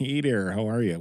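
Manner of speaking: put-on Minnesota accent. Greeting the co-host after a trip to minnesota, in a minnesota accent. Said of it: "so now I have to talk like this".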